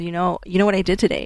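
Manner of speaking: ordinary talk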